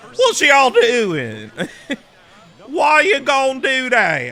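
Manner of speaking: put-on dazed, very high, swooping punch-drunk voice. Showing off your accent for Wild RP, sound like a man horse-kicked in the head too often. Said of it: "It's like a man that's been kicked in the head by the horse too many times".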